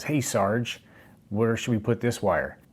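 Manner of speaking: snide, taunting, sarcastic mocking tone. Retelling how a senior airman taunted him on the job, imitating a mocking tone. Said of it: "in a mocking tone".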